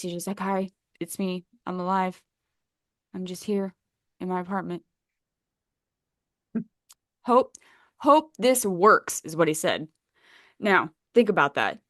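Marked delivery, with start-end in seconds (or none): 0.4-9.2 put-on flat, emotionless, deadpan delivery. Retelling a man's proof of life video: imitating an emotionless delivery. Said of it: "there's no ex-, emotion to this fa-, to the face".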